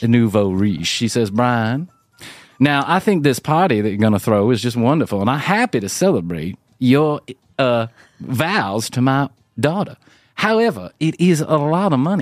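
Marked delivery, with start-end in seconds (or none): 1.3-12.2 put-on slow, old-money Southern drawl. Quoting an old-money woman speaking to Brian about his party, in a southern drawl. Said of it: "she's got this southern drawl".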